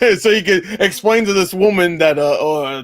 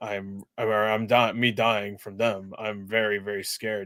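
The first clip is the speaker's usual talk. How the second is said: very soft, very low, quiet deadpan monotone drone; 10 semitones lower, 12 dB quieter than usual. Talking about being worried, in a flat monotone. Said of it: "You could tell from my monotone fucking voice that I'm really worried about it".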